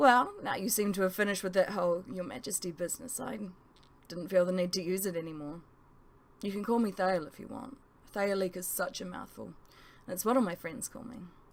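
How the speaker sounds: ordinary delivery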